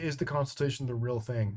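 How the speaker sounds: ordinary talk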